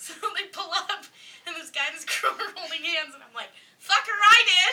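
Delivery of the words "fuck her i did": very loud, high-pitched, taunting yell. Speaker recalling yelling at a couple holding hands as a child, retelling a yell. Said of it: "after you yelled it".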